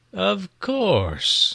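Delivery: high, cloying, syrupy, sickly-sweet tone. The tax collector answers Issachar's challenge: sickeningly sweet. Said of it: "steeped in sickening sweetness".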